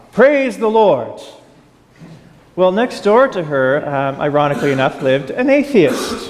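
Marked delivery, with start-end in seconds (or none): 0.2-1.2 put-on play-acted old lady voice, loud, bold yelling. Telling a story about an elderly lady who yells to passers-by, imitating her yell. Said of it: "she'd yell out to passers-by".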